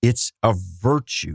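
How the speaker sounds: slow, deliberate emphasis, each word drawn out. Interrupting the other speaker to repeat their words, said slowly. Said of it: "Let's say that slowly again".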